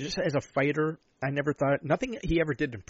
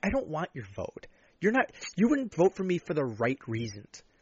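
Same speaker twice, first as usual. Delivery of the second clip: mock scornful, contemptuous, swooping dismissive tone; 2 semitones higher than usual. Speaker imagines answering a would-be voter, acting out contempt. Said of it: "I would just look at him with such contempt".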